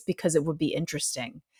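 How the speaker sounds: even, unruffled, calm voice, low and soft. Retelling what a stranger answered when asked why, imitating his calm voice. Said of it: "in the same calm voice".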